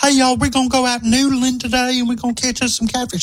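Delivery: put-on very high-pitched Southern Alabama accent. Imitating a girl from Alabama in old clips, Southern accent. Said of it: "but her voice, she was like".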